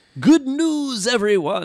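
very high, loud announcing voice. Naming a favorite Futurama character and quoting his catchphrase: Professor Farnsworth voice. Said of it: "Professor Farnsworth".

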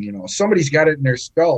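quick, lively Irish accent.

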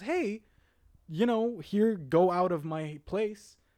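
put-on breezy, nonchalant tone. Retelling a teacher sending a spider away: imitating a very casual tone. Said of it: "uber casually just takes them off and goes".

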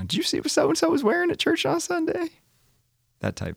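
put-on Southern woman's accent. Talking about showing off at church, imitating a Southern woman. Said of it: "that was my imitation of a Southern woman".

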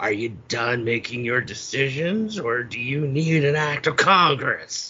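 mocking, crackly, scolding put-on voice. Imitating a movie character chastising indecisive kids: imitating a crackly chastising voice. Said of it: "when he's chastising the kids".

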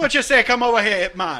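poor put-on Jamaican, nearly Irish. Joking about Ip Man, challenging someone in a terrible Jamaican accent. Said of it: "That's a terrible Jamaican accent".

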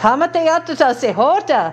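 mock phrase, lightly called out. Recounting what someone behind you called out at the airport, retelling a loud call. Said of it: "I heard in a loud voice".

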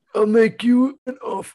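very high-pitched voice. Trying the same impression after the other speaker: attempted Marlon Brando impression. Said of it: "I was trying to".

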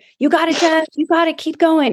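play-acted screaming, high and pumped-up. Retelling her husband screaming at her to motivate her on a hard move, imitating someone screaming. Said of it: "my husband starts screaming at me".

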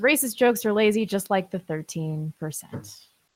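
ordinary talk, nothing marked

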